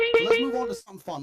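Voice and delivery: hyped-up delivery.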